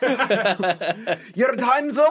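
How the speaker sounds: put-on high, loud, slow, angry shout in Scottish accent. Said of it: "sounded like an angry Scotsman".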